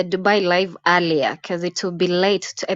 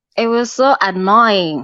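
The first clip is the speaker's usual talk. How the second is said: ordinary talk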